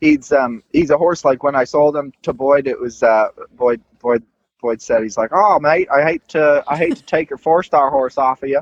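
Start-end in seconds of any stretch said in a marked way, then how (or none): 5.3-8.6 put-on friendly, easygoing Australian accent, pitched up slightly. Retelling what a buyer said when taking the horse: imitating Boyd's Australian accent. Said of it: "I like his, uh, Australian accent".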